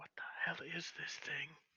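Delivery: very quiet, hushed, breathy whisper. Player in a role-playing game reacting to the purring creature: whispering. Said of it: "Just kind of whisper".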